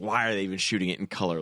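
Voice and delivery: plain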